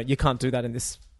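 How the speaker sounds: ordinary delivery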